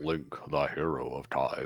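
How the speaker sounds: put-on mock manly voice. Reading a game character's line aloud: put-on man voice. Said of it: "This is my man voice".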